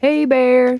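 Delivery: loud, full-volume hollering yell. Showing how people in the woods call out: imitating people yelling. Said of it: "people will run through the woods yelling".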